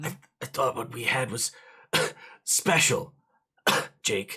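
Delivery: acted coughing while speaking, dying voice. Voicing a dying character who coughs blood: acted coughing while speaking. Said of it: "he coughs blood on you".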